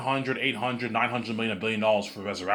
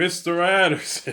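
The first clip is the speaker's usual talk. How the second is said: high, mocking, deliberately bad send-up voice; 7 semitones higher than usual. Mocking the young actor who played Smith, imitating the Smith actor. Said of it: "He's like".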